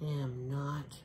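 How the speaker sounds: half-whispered under the breath, soft and hushed. Narrating a story character replying to a taunt, half-whispering. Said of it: "whispered Louise".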